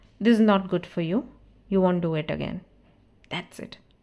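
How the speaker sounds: calm, steady voice carrying firm, weighty emphasis. Showing how to tell someone off just once after a repeated mistake, calm and weighty. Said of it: "एक बारी बोलो और वजन के साथ ... ये वाली टोन ... शांत रहोगे".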